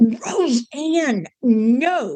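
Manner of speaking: stern, scolding motherly voice with drawn-out "no". Recounting being scared, speaker slips into imitating mom scolding. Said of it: "did I sound like my mom on a bad day".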